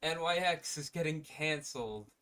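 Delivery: bright cheerful delivery. Announcing which X-Men book is getting canceled, sounding happy. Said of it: "Why you sound so happy about".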